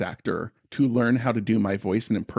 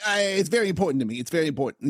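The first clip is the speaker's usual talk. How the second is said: high-pitched New York accent; 6 semitones higher than usual. Joking about converting to Judaism, Woody Allen voice. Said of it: "like in his voice".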